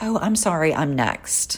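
fumbling, awkward, stumbled-out words. Retelling what was said to someone who cut in line: imitating own fumbling apology. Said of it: "I kind of fumble with it".

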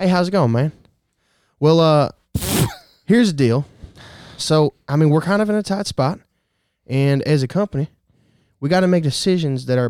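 slow American Southern accent. Role-playing what a southern guy might say: southern American accent. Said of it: "here's what a southern guy might say".

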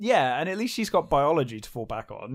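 plain

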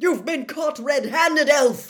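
thundering, very loud bellowing roar. A narrator reads a man accusing an elf caught holding a wand; roaring. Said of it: "Diggory roared".

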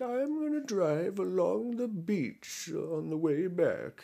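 put-on high, slow, sweet old grandma voice. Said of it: "stereotypical, like, old, like, grandma voice".

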